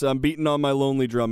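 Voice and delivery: ordinary talk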